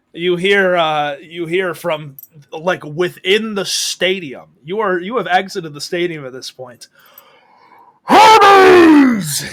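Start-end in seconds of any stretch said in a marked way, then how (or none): 8.1-9.6 coach-style shout, louder and higher. Narrator voices a coach calling from within the stadium; Coach Fleetfoot yelling. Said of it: "You hear Coach Fleetfoot yell".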